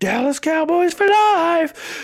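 very high put-on angry rant, word life stretched. Retelling Corey's harassing messages in a group chat: imitating Corey's angry rant. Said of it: "He's like".

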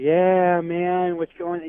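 mock sleepy, half-awake, drowsy voice. Teasing a co-host about always sounding tired, imitating a tired-sounding voice. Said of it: "Why do you always sound like you're kind of tired".

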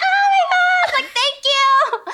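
squeaky, very high, drawn-out dolphin-like excited squeal. Retelling how they sound when excited: imitating own excited high-pitched voice. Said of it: "'Cause when I get excited".

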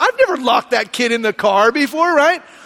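ordinary talk, nothing marked

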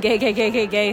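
ordinary delivery

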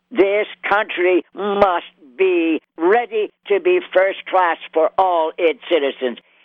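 upbeat, lively put-on voice. Describing his vocality, then doing an upbeat FDR impression. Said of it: "he just had this upbeat, I'll give you an impression of FDR".

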